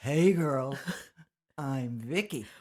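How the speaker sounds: very low, deep, slow baritone voice. Introducing herself again when asked to repeat it: deep baritone voice. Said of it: "Why are you a baritone?".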